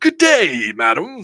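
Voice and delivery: put-on courteous, polite, British-sounding accent. Retelling his reply to his kids, talking in a British accent. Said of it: "I found myself talking British".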